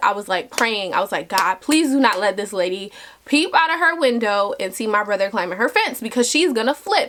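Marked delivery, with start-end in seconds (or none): none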